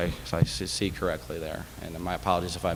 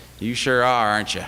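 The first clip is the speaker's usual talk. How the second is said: strong, laid-on, loud, high Texas twang; 5 semitones higher, 8 dB louder than usual. Retelling what a man said to the speaker, in a very Texas twang. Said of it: "in a very Texas twang".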